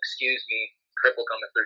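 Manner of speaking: mock saddest, depressed, low, soft, mournful voice. Telling a story of walking back past the locker room, imitating JT Daniels's sad voice. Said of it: "Just the saddest, most depressed voice".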